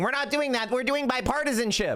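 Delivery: screaming at a high pitch. Mocking a senator at a ribbon cutting: imitating Chuck Schumer screaming. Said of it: "he's screaming".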